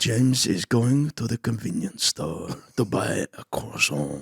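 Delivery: storytelling voiceover narrator voice. Imitating the man from a pronunciation video narrating daily life: imitating the pronunciation video guy narrating. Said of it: "I want this guy to narrate my life".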